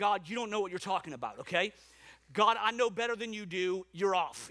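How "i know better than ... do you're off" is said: normal talking voice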